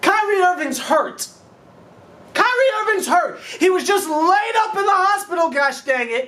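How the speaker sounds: genuinely upset, dismayed voice. Speaker opens a different kind of video, upset. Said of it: "I'm just upset".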